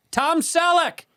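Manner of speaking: very high, loud calling out. Retelling how his dad called out a celebrity's name: imitating dad calling out loud. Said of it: "he literally out loud goes".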